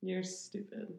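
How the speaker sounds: said sarcastically. Saying it to the other speaker, sarcastic. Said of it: "I was saying that, like, sarcastically".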